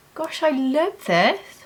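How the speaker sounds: genuinely astonished, high, really surprised tone. Trying a makeup product that went on easily: surprised. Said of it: "I'm saying that in a really surprised tone".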